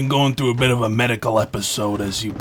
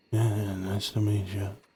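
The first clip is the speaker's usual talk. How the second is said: lacking enthusiasm; 7 dB quieter than usual. Greeting a detective who just introduced himself, unenthusiastic. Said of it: "don't sound too enthusiastic".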